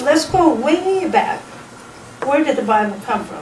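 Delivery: ordinary delivery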